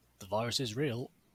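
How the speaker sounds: normal talking voice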